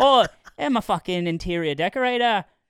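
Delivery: Australian-sounding voice. Trying an Irish character but slipping into an Australian-sounding accent. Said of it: "That's Australian".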